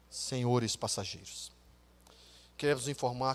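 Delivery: mock-grim pilot voice. Retelling a flight, imitating the captain's doomed-sounding announcement to passengers. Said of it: "aquela voz, irmãos, que parecia que tudo estava acabado".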